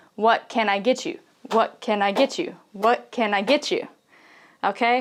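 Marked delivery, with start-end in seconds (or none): 0.2-3.9 very fast, native-speed, rattled-off run of words. Teaching learners how Americans say a phrase, the speaker says it very fast. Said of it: "say it very fast".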